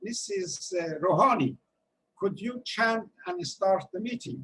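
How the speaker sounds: ordinary delivery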